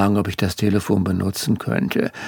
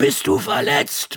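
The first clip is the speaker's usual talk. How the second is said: high-pitched, mild, shout-like bellowing voice; 6 semitones higher than usual. The narrator's mother answers his phone call, bellowing. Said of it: "brüllte meine Mutter".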